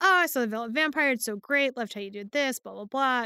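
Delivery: ordinary delivery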